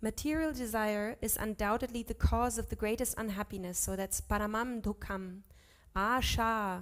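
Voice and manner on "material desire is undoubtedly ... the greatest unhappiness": ordinary talk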